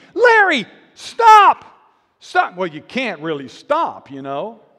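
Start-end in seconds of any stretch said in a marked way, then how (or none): 0.1-2.5 shrill, very loud, high, full-volume screaming. Describing a girlfriend's recorded shout after her boyfriend was cut loose, imitating a woman screaming. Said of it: "his girlfriend after they cut him loose screaming".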